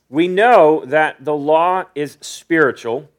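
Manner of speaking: slow, measured reading tone. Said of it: "I'm gonna read it pretty slow".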